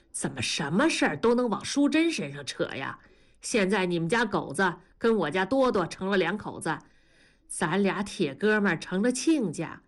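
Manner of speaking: plain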